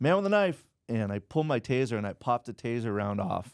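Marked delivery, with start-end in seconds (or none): 0.0-0.6 put-on sudden, very high, loud call-out. Retelling warning his partner Dale about an attacker: imitating own past yell. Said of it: "I remember yelling at Dale".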